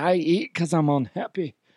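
put-on thick Scottish accent, comic voice. The speaker quotes what they tell themselves, in a Fat Bastard voice. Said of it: "I always think of Fat Bastard and be like".

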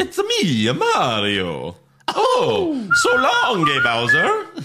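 drawn-out sing-song character voice, high, very slow, swooping. Discussing the movie casting, the speaker does the Mario voice. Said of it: "everyone knows Mario with that voice".

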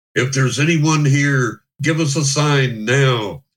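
stagey, solemn, dramatic, theatrical delivery. Retelling a candlelit circle, quoting a buddy: put-on loud, dramatic call. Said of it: "He says in this loud, dramatic voice".

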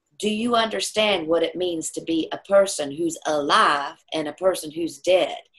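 put-on earnest, serious, fatherly Southern accent. Retelling what dad asked when the speaker was five, imitating his booming southern voice. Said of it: "he had this big booming southern voice".

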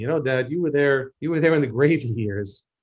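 plain

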